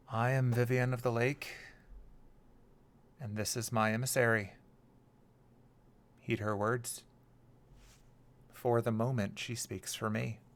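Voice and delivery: reverberating, echoing character voice. Swelled into a giant geyser, Vivian of the Lake addresses everyone, reverberating voice. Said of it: "in a voice that is passing through, like the way sound reverberates".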